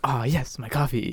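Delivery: put-on douchey actor voice. Imitating how a douchey actor character talked in the movie: Lucas Lee voice. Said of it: "I love the way he talked in that".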